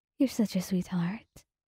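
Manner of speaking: plain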